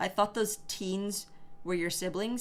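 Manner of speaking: ordinary talk, nothing marked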